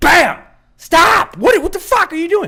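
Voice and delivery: over-the-top, very high, shrill, furious angry outburst. Retelling being clipped by a car: retelling an exaggerated angry yell. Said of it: "I overreacted intentionally".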